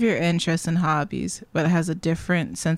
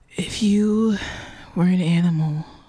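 fake flirtatious voice. Showing how the speaker's brother hits on a woman: imitating brother's flirt voice. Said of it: "Why does he talk like that?".

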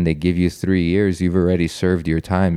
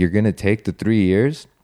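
put-on loud delivery; 3 semitones higher than usual. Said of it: "And he said it loudly".

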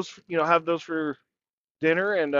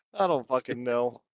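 usual speaking voice

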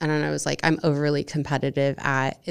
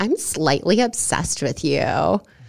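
put-on airheaded, ditzy voice; 3 dB louder than usual. Retelling a dating-app message from a woman: imitating in a ditzy voice. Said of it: "insert ditzy voice".

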